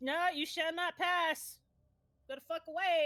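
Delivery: big booming statue voice. Retelling a story, the speaker voices a statue on the main floor, booming. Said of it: "there's a booming voice".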